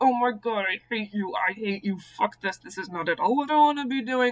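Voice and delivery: closed-mouth ventriloquist speech, lips not moving. Retelling what they said without opening their mouth, ventriloquist talking, lips closed. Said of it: "closing my mouth, but doing that kind of like ventriloquist talking thing".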